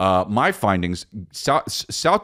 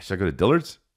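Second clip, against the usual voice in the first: put-on South Dakota accent. Doing an impression of a person wondering about Dillard's, imitating someone in South Dakota. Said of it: "Here's my impression of someone in South Dakota".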